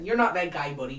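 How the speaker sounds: Midwestern US way of talking. Repeating a phrase the way it must be said, Midwestern accent. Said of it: "You have to say it with a Midwestern accent every time".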